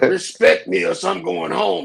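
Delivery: slow, drawn-out, rough mocking voice. Mocking a friend's threat to leave: James Earl Jones voice, mocking Lucky. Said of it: "James Earl Jones voice ass talking".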